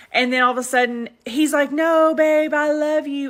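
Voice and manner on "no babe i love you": mock drunk, slow, high, drawn-out pleading. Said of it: "so they're drunk".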